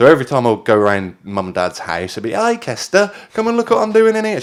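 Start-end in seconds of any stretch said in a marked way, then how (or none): 2.3-4.4 put-on very high-pitched Brummie accent. Recalling how mum greeted them at their parents' house, imitating mum's Brummie accent. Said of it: "She had a bit of a Brummie accent as well".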